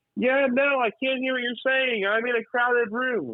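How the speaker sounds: very high, lunatic, screaming screech. Imitating a woman taking a call in a crowded room, imitating her screaming. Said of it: "Why are you screaming like a lunatic?".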